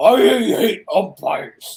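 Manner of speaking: loud, over-the-top, over-exaggerated, laid on thick. Doing an over-exaggerated impression of Josh for the show. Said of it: "an over-exaggerated Josh impression".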